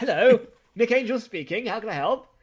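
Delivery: loud, crisp, polished telephone voice. Teasing a friend about how they answer the phone on the toilet, crisp phone voice. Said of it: "you're talking like a really crisp voice".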